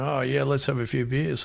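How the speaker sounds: usual speaking voice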